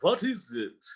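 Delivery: vampire accent, W in "what" turned into V. Showing how a vampire might talk: vampire accent, W's said as V's. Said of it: "You could do your W's like V's".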